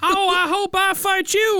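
put-on weird, high, slow kid voice with southern accent.

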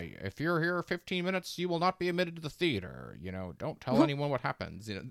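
carnival barker hawking voice. Riffing with co-hosts on a movie's admission rules: Hitchcock as a carnival barker. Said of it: "making Hitchcock sound like a carnival barker".

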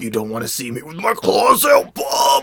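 furious, swooping cartoon superhero voice. Describing X-Men cartoon voice acting, in a mock-angry Wolverine voice. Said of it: "until he gets really mad".

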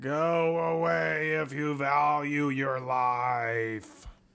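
eerie, spooky groan, life drawn out. Retelling a voice heard behind a closed amusement-park door, groaning spooky voice. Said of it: "this groaning voice that says".

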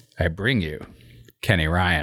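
low-pitched put-on voice.

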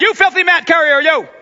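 loud, berating, scolding yell. Retelling how the Pharisees yelled at the healed man: imitating Pharisees yelling. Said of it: "they start yelling at this guy".

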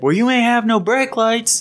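high, furious yelling. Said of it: "He's yelling".

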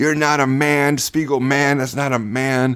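mock, high, drawn-out screaming. Retelling a phone call where he screamed at the speaker: imitating Gary Busey screaming. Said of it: "he's screaming at me, going".

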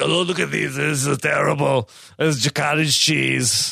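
mock tone dripping with disdain and scorn. Imitating how he talks about thighs: imitating a disdainful tone. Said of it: "He talks with, like, such disdain".

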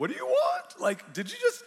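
high, loud, freaked-out, disbelieving. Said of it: "it kind of freaked me out".

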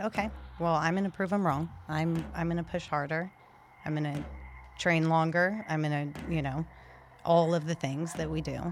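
ordinary talk, nothing marked

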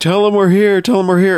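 high-pitched shout. Retelling a movie scene of yelling down through a grating: imitating someone yelling. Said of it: "yelling down through the grating".

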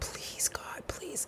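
whispered, pleading, begging voice. Recalling praying as a parent, the speaker is retelling past begging. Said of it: "I was begging".

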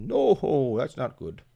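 slow, deliberate put-on voice. Retelling a wrestling bit on Raw, the speaker gives Santa's reply to Mick: Santa voice. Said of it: "That's my Santa voice".

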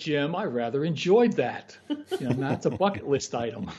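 put-on British accent. Speaker quotes the client after they were all soaked, imitating his British accent. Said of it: "His British accent".

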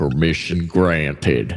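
tough, hard-nosed army general voice. Answering a soldier who asks permission to fire: hard-nosed five-star general voice. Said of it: "that guy sounds like a".

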